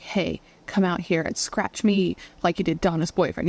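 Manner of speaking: plain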